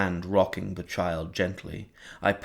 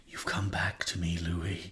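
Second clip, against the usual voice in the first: thin, whispered voice; 5 dB quieter than usual. Narrating a novel, Lestat speaks to Louis in a thin, high-pitched whisper. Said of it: "he whispered in that thin, high-pitched voice".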